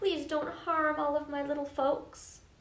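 begging, pleading, imploring tone. Narrator voicing a character chasing an eagle that carries off his flower, begging. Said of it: "And he begged".

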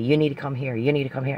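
acted-out yell. Woman recounting her child's father yelling at her: retelling his yelling. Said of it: "he's yelling at me".

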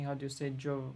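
ordinary delivery

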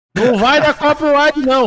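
deliberate shout, loud and high.

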